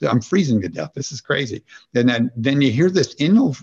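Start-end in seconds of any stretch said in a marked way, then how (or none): none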